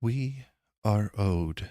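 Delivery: gentle, tender-toned voice. A presence felt in the room speaks for the first time: soft voice. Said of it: "you hear for the first time this soft voice".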